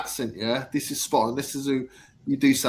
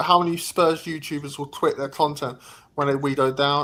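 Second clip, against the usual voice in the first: plain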